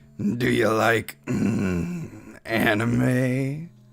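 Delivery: very slow, creepy close-talker voice. Reading out a chat message the way it sounded in his head: creepy too-close guy voice. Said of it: "read that to you how I read it in my head".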